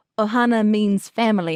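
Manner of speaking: plain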